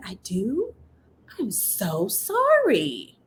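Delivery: very drawn-out, slow, swooping, fake-sorry sarcasm. Retelling a reply to a principal's complaint, imitating own sarcastic apology. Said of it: "my professional sarcastic answers ready".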